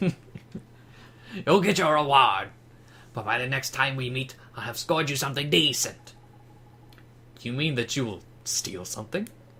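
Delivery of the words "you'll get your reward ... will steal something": sneer in the voice. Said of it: "Let's give him Waluigi voice".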